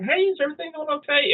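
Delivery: play-acted very high, quick, sweetly smiling voice. Speaker retells his wife asking if everything is okay, imitating someone smiling. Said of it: "And she's smiling".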